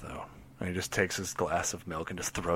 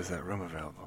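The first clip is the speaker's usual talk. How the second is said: normal talking voice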